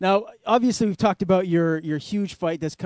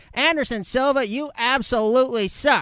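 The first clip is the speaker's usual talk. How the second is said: slightly nasal put-on voice; 7 semitones higher than usual. Imitating someone trash-talking Anderson Silva, slightly nasal put-on voice. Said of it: "Is that pretty on par, or is that a little too nasally?".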